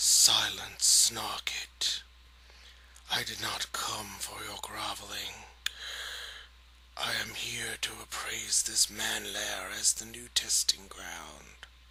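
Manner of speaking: low, raspy, mechanical voice with an echoing quality. Narrating a story, the reader voices Ikit Claw silencing Snarkit: raspy mechanical voice. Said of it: "His raspy mechanical voice then echoed".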